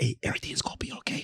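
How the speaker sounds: hushed, soothing, reassuring whisper. Retelling calming a scared friend in a car: retelling own past whisper. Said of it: "So I'm whispering in the car the whole time".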